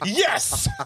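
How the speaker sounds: yes stretched out mockingly.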